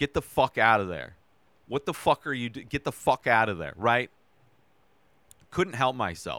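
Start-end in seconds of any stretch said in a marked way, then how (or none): 0.0-3.7 alarmed, scared yelling shouts. Retelling watching a scary movie alone: imitating yelling at the tv. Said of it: "I yelled during this movie".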